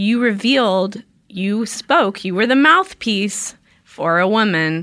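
plain

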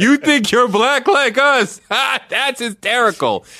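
high, loud, laughing, mocking disbelief.

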